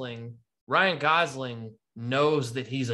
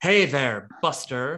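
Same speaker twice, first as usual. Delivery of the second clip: put-on forties actress voice. Imitating an actor's film role like a forties actress: Kevin Spacey impression. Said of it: "'cause he's like".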